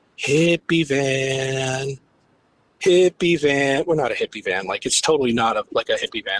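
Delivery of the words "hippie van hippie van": imitated drunken man's voice. Retelling what a drunk man outside the van kept saying: imitating a drunk man. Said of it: "He's drunk".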